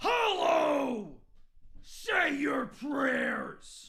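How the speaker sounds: shrill, very high, loud creature-like shriek. Ending a bit on a Discord recording, screaming. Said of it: "I don't want to make a habit of screaming right now".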